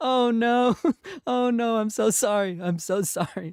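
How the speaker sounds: slow, drawn-out speech through laughter. Apologizing for a remark that sounded horrible: laughing while apologizing. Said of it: "I know I'm laughing".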